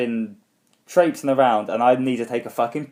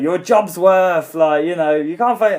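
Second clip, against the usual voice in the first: put-on, high-pitched, yelled scream; 6 semitones higher, 4 dB louder than usual. Retelling an arrest, a girlfriend's words through the window: imitating someone screaming. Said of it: "Jane starts screaming through the fucking window".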